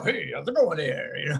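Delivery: mock on-air broadcast announcer voice. Imitating how a weird-looking man always talked, in an on-air voice. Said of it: "he always talked like he was on the air".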